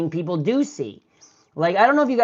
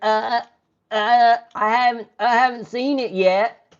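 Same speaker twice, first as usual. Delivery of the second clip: very slow, faltering, hesitant stammer, stalling on each word; 4 semitones higher than usual. Retelling a senator's answer about a comment: imitating Susan Collins. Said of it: "And she's like".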